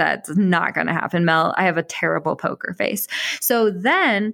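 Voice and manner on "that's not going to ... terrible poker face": ordinary talk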